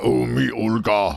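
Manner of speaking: put-on Eastern European accent. Imitating how Eastern Europeans sound: Eastern European accent impression. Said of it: "I don't usually sound like".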